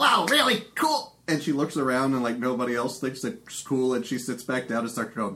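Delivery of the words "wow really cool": shrill goblin cheer, very high-pitched and loud. Voicing a goblin in the crowd who stands up and cheers: cheering goblin voice. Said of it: "like a goblin, ... she stands up and goes".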